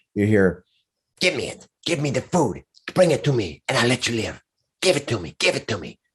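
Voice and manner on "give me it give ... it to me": swooping, demanding monster voice. Voicing a monster speaking telepathically into a player's head: monster's telepathic voice. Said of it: "in your head, you hear".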